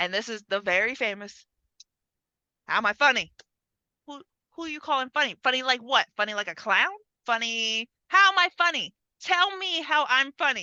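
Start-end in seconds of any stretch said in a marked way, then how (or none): 2.7-10.6 hotheaded, pushy tough-guy voice. Retelling a famous movie scene, imitating Joe Pesci's hothead character. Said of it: "this guy is the hothead".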